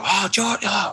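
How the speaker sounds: very high play-by-play broadcaster announcer voice. Acting out a kid calling their own bedroom shot: broadcaster voice. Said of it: "that broadcaster in your head voice".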